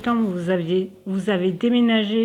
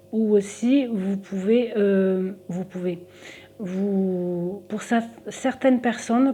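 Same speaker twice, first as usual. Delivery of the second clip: fumbling, restarting words, drawn-out "vous"; 3 dB quieter than usual. Speaker giving salary advice to listeners, stumbling over words. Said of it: "je bafouille un peu aujourd'hui".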